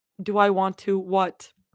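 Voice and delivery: ordinary talk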